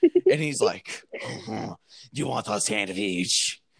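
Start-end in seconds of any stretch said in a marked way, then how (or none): 1.1-3.6 fake French accent, quieter. Retelling a scene, quoting a fancy man offering a sandwich: put-on french accent. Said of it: "That is so French".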